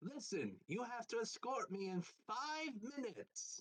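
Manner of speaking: very high-pitched character voice. Voicing a character who demands an escort: Frieza impression. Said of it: "best Frieza impression and goes".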